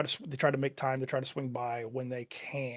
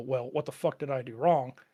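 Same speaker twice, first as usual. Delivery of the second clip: put-on upset, emotional outburst, louder; 4 dB louder than usual. Retelling what one says when hurt by absent friends: imitating getting emotional. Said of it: "when you get emotional about it and you go".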